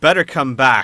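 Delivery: loud carrying voice. Voicing a character who calls out to all the listeners: loud enough for all to hear. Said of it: "says it loud enough for all of you to hear".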